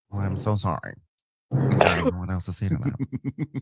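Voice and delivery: very low, serious, level deadpan monotone. Imitating an insincere apology: Meredith Marks serious monotone apology. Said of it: "Meredith Marks doing the very serious monotone, um, insincere apology".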